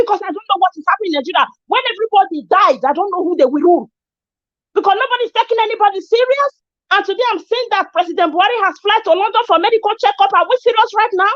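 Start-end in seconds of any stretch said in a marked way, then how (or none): 0.0-6.5 angry voice rising higher. Speaker talking about insecurity in Nigeria, angry with voice going high. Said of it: "I'm sorry if my voice is going high".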